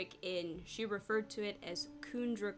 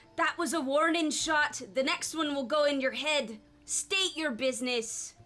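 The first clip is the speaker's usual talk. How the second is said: very loud, high-pitched cry; 6 semitones higher, 9 dB louder than usual. Narrating a scene, a voice calls out after an arrow lands: crying out a warning. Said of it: "a voice cry out".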